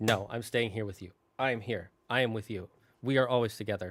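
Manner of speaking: ordinary talk, nothing marked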